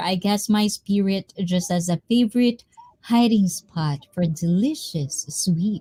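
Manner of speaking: normal talking voice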